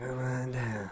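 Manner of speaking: rasping, hushed, barely audible whisper. Imitating a man from a local furniture commercial: imitating a raspy whisper. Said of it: "Raspy whisper".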